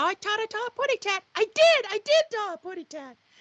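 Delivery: squeaked out very high with a lisp. Asked whether Tweety Bird talks, speaker answers in a Tweety Bird impression. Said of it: "I taught it how putty cat".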